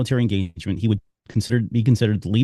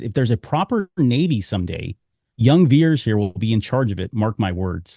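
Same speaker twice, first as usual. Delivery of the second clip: plain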